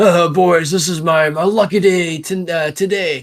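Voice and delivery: loud, high, far-carrying holler. As players walk in, a familiar voice calls from the gambling hall's back: Brutus yelling from the back. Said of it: "yelling from from the back".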